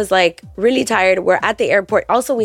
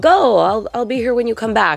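usual speaking voice

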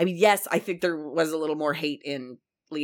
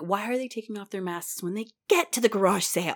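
put-on upset voice; 5 semitones higher than usual. The speaker quotes the man they live with, imitating him upset. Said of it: "he's very upset".

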